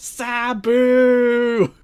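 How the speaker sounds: mock eager, earnest, enthusiastic, very high and loud. Retelling how he calls out the name Sabu, imitating Don West's earnest enthusiasm. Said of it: "he says it in the exact same way with like such the earnest Don West enthusiasm".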